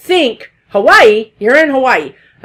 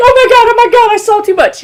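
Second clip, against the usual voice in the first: put-on very high-pitched, frantic, panicked babble; 9 semitones higher than usual. Retelling how a woman lost in a hallway reacted: imitating someone panicking. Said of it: "she was just like panicking".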